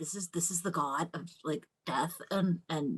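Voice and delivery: soft whisper with awe.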